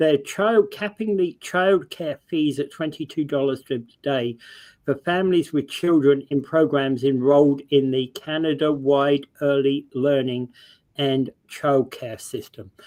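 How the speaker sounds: very slow, deliberate, each word placed with care. Reading the next item off the list, saying it very slow and careful. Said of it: "I had to say that very slowly, very carefully".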